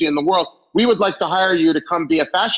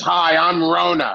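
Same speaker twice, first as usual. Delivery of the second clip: rough, raspy woman's voice, smoker's rasp. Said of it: "this third raspy woman".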